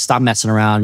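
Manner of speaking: plain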